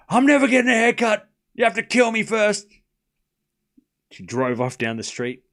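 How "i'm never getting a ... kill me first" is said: hollered, raised, high-pitched shout. Retelling what was shouted after the door slammed: retelling own shout. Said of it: "And I shouted".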